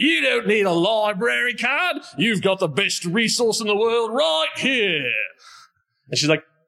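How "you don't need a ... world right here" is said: high, declaiming, proclaiming voice. Narrating a story, a voice from down the hall answers you: loud booming Dr. Lawrence Cross voice. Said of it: "a loud, booming voice say".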